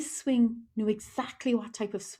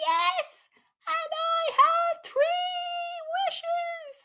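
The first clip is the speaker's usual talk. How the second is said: very high, tiny little fairy voice. A storyteller reads the fairy's reply to the children, in a little fairy voice. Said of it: "heard the little fairy voice saying".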